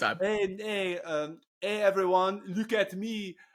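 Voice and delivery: rabbit voice with French accent. Taking the floor as a rabbit character: french rabbit voice. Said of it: "French rabbit right quick".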